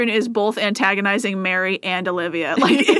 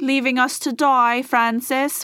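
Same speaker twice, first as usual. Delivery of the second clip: put-on mimicked English accent, higher; 4 semitones higher than usual. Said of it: "his accent is so much different than everyone else's".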